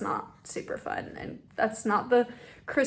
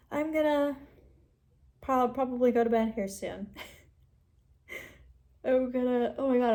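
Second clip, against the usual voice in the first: talking through a yawn; 2 semitones higher than usual. Saying good night to viewers before bed, while yawning. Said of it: "I can't stop yawning".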